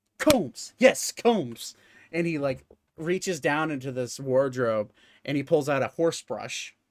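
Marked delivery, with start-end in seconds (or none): 0.2-1.8 high-pitched, musing shopkeeper character voice. Voicing a shopkeeper showing a huge comb to customers: voicing the shopkeeper. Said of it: "and he's like".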